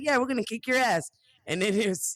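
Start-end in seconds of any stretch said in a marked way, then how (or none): none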